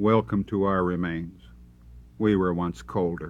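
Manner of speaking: ordinary delivery, nothing marked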